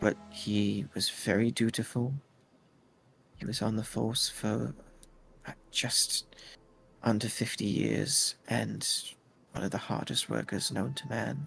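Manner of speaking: confiding, conspiratorial tone. After locking up her house, a woman tells listeners about a man in a very hushed voice. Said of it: "in a very hushed voice".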